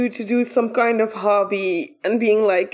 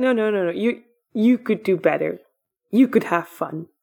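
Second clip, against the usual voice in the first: put-on creepy voice, much lower; 3 semitones lower than usual. Speaker acts out what a creepy voice says to a man, creepy voice. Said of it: "the creepy voice just goes like".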